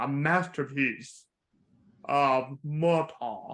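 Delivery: terrible impression, slow drawl lingering on every syllable.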